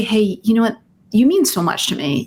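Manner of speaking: ordinary delivery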